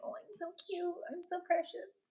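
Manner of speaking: tiny, very high, hushed cutesy voice. Voicing the dog, who puts on an act: voicing the dog acting cute. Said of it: "She's a little actress. She's like".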